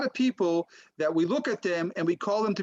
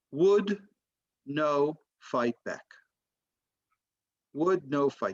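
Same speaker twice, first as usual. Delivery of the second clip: put-on low, unimpressed deadpan delivery; 5 semitones lower than usual. Storyteller quotes a man's reaction while everyone turns to him: retelling a deadpan reply. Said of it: "in a deadpan face".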